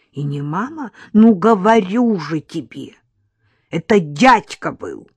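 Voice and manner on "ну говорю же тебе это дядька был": put-on loud, very loud, cross, angry girl's voice. A little girl answers questions about a masked man, angry reply. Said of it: "сердито отозвалась девочка".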